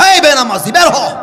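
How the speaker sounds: harsh, high, loud, barked scolding tone.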